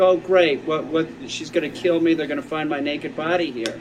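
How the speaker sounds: ordinary talk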